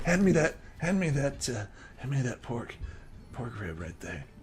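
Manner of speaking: put-on drunk, fumbling voice with halting repeats. Voicing a drunk NPC reaching over the table for food: drunk character voice. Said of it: "he's clearly intoxicated".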